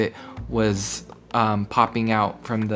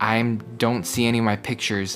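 normal talking voice

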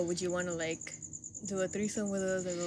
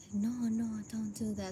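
slow, hushed, under-the-breath half-whisper; 3 semitones higher, 4 dB quieter than usual. Imitating another speaker refusing money so the giver won't hear: imitating someone half-whispering.

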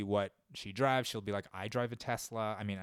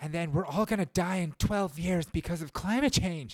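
put-on high, loud, crazy college girl voice going off; 8 semitones higher, 6 dB louder than usual. Showing how she sounds, imitating some crazy girl a semester into college. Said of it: "she just sounds like some crazy girl".

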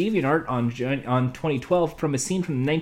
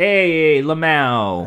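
New York voice, louder; 6 dB louder than usual. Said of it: "N Y C Guido voice".

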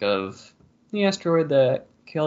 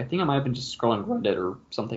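cracked voice, breaking partway through; 4 dB quieter than usual. Recalling how a theory was first found online, voice cracking. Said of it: "and my voice cracked".

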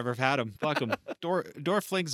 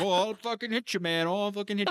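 put-on angry wrestler voice, higher pitch; 8 semitones higher than usual. Retelling a wrestling match, imitating Bret threatening a heel. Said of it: "arm wheel up".

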